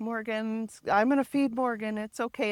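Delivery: soft, affectionate put-on voice. Retelling friends who came over to help, imitating Elizabeth's sweet voice. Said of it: "super soft, sweet, loving voice".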